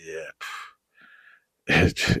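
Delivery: soft, super deep, angry put-on voice. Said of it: "that's got the mad deep voice".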